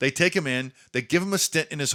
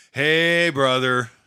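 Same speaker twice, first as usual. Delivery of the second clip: gloomy, somber tone, louder; 6 dB louder than usual. Retelling a friend's phone call, imitating a bad-news voice. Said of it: "he already has the voice of bad news".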